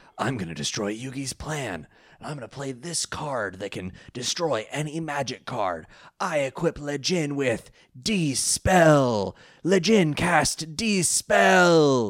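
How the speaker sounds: slow, deliberate, smug anime rival voice. Recapping an episode, the speaker quotes a character's card play: Kaiba impression. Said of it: "He says it like Kaiba".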